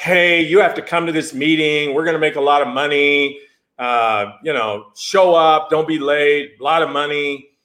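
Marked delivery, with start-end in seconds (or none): none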